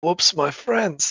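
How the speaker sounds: soft muttered aside under the breath. A character moving in to bear-hug a bot speaks: muttered under breath. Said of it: "under his breath he goes".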